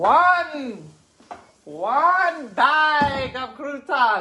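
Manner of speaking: very slow vampire voice, "one" stretched long. A speaker asks listeners to count croutons along, doing a Count impression. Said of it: "I'm like the count".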